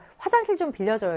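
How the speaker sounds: ordinary delivery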